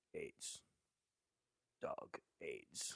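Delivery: put-on flat, whispered, deadpan cadence. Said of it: "is that called a cadence?".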